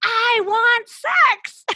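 very high, very loud, shrill all-out scream. Speaker acting out a woman's words to them, retelling a scream at full lungs. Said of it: "screamed out at the top of her lungs".

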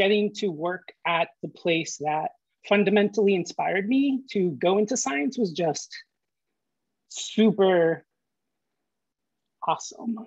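voice right on the edge of crying, holding back tears. A scientist born in Arecibo recalls working at the place that inspired them, holding back tears. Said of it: "So trying not to cry".

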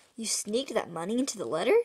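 usual speaking voice

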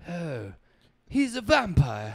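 mixed southern-British put-on accent. Showing a mix of southern and British accents: Keanu Reeves half southern half British accent. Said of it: "he, like, combined it".

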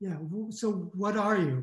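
put-on New York accent. Retelling what a man who shouted at him said back; imitating new york accent. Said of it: "he said in his best New York way".

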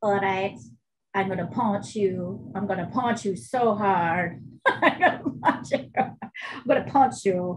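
put-on talking cat voice. Imitating a talking cat from TikTok videos: put-on talking cat voice. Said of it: "the cat is talking like a".

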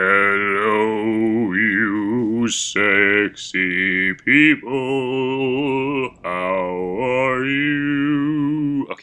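voice dropped as low as possible, drawn-out "you". Talking into a laptop alone, testing how low the voice can go. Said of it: "Let's see how low my voice can go".

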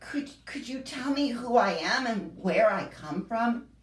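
anxious, uncertain tone. A strange little creature questions a creature with a pointed horn, anxiously. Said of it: "said the strange little creature anxiously".

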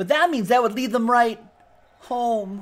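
very high-pitched sci-fi movie hero voice. Showing off Star Wars trading cards, the speaker does a Luke Skywalker impression. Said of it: "That was my Luke Skywalker impression".

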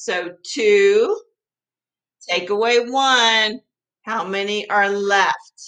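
eager, excited voice, with two drawn out. Teaching subtraction with the three little pigs, getting all excited. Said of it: "I'm getting all excited".

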